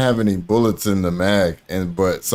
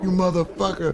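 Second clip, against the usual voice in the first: very high-pitched, soft, hushed angry cursing; 9 semitones higher, 5 dB quieter than usual. Retelling how she reacted after he refused, imitating someone angry. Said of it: "She was mad".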